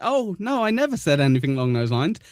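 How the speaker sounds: mocking high tone. Quoting another speaker's denial back at him: imitating Buck's denial. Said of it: "You're s-, saying".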